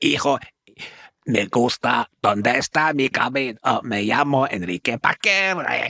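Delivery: slow, lispy Spanish accent. Showing how doing an impression helped master a spanish accent, stereotypical lispy spanish accent. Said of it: "your impression might be a bit stereotypical".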